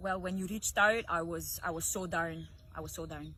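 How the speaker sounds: very low, soft Scottish accent. Playing an accent game, answering in the called-out accent: Scottish accent.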